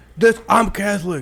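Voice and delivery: angry heckling voice. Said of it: "he's like".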